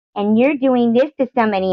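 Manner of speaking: snotty, very high-pitched read-aloud voice. Retelling how a comment was read aloud in a video: imitating Amy's snotty reading. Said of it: "reading something that I had wrote in a snotty tone".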